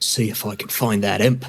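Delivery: hushed, leaning-in half-whisper. Leaning in to a companion in a bathhouse: half-whispering. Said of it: "I lean in and I whisper".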